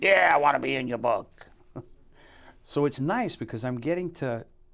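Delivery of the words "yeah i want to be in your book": raised, raspy detective voice. Retelling what an excited detective said when called up, in a raspy voice. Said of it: "He's got one of those raspy voices".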